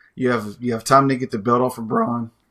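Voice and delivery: voice cracking and breaking up mid-line. Discussing who should take the belt off braun, voice cracking. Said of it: "my voice cracked".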